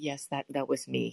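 put-on hushed voice. Retelling how a professor very quietly answered the speaker, imitating a very quiet reply. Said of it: "this guy very quietly said".

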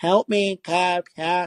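very slow, high, whiny, drawn-out voice. Retelling a woman in a video calling for the cop: imitating a whiny voice. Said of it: "She had kind of a whiny voice".

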